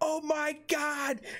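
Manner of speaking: put-on, very high-pitched screaming voice. Retelling how the mother reacted on walking in: imitating a mother screaming. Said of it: "And she just starts screaming".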